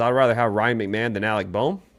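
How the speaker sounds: ordinary talk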